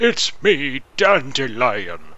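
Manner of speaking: put-on high old man voice. Complaining about a replacement voice actor, speaker imitates him: old man Dandelion voice. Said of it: "this is supposed to be my old man voice".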